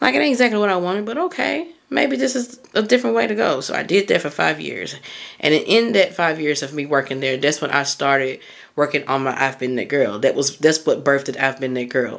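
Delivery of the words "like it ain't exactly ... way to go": much higher pitch, only half convinced. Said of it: "I'm like".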